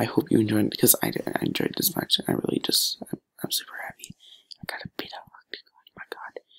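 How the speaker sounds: hushed, whispered chatter. Wrapping up your video late when you should be in bed, whispering. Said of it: "I'm just kind of whispering".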